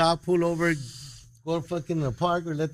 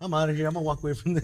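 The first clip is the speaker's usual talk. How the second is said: ordinary talk, nothing marked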